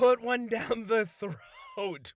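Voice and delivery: high, loud, drawn-out, stretched-out holler. Speaker recounting what they yelled in the moment, retelling a yell. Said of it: "And I just yell I yell".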